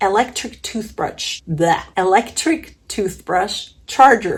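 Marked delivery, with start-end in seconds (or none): 1.5-4.4 careful, precise enunciation. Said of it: "Try to say that five times fast".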